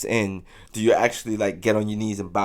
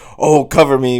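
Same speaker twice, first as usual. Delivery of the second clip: put-on accent of British royalty; 4 semitones higher, 9 dB louder than usual. Imagining the king playing an online shooter game: King Charles accent. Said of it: "with his accent or whatever".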